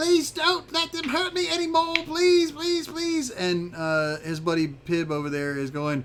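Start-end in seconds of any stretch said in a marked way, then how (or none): 0.0-3.3 very high, frantic, panicked shrieking and screaming. Voicing a creature hopping and screaming, begging not to be hurt: screaming in panic. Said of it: "screaming in Draconic".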